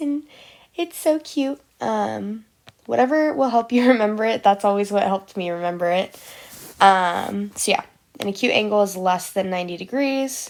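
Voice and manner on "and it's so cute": put-on cutesy, high little baby talk voice. Speaker explaining angles shows how she says cute, in a little baby voice. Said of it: "I talk in a little baby voice".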